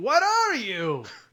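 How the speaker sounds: high, loud shouted delivery. Retelling what a stranger on the street said: imitating a man yelling. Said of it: "everything he yelled at me".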